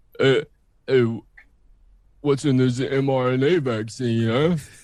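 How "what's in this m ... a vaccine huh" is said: talking in a lower voice. Taking a turn trying to go low: put-on deeper voice. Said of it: "impossible to go low and not put in some stupidity".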